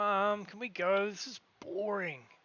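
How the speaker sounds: put-on high, bored child voice. Narrator voicing a son standing with his mother, in the son's voice. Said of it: "the son's sitting there going".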